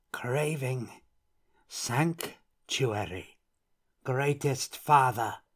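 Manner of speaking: sibilant sounds pushed through a hiss. Reading a story, a bowing woman addresses the patriarch, hissing. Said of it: "she hissed".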